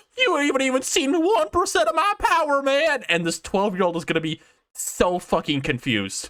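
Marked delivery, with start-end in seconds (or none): 0.2-3.1 very high-pitched cartoon-style voice. Imagining the game's character talking: Shaggy voice. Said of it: "click on Shaggy ... he's gonna start going".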